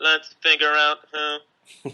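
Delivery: very slow, flat, monotone robotic machine voice. Correcting how another speaker quoted Bernard: robotic voice imitating Bernard. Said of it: "Bernard sounded more like this".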